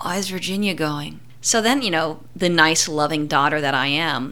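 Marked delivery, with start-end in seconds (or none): 0.0-1.2 dazed, soft, out-of-it mumbled speech. Daughter retelling her stoned dad's question, imitating a mumble. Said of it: "he just mumbles out".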